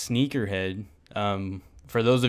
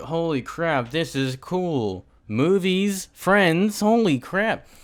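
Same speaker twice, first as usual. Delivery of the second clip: put-on high, excited gushing in a kid voice. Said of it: "you guys are like".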